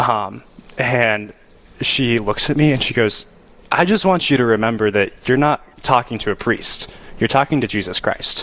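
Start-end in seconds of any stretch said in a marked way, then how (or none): none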